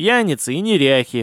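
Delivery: ordinary delivery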